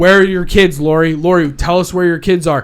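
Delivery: loud, badgering reporter-style shouting. Retelling how reporters shouted questions at a couple: imitating reporters shouting. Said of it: "they're just shouting, like".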